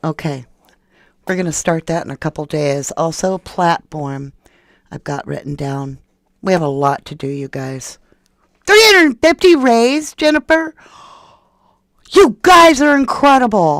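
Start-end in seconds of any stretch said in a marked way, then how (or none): 8.7-13.8 very high, thrilled, excited shouting. Telling the group how much was raised, excited yelling. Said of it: "Sorry for yelling".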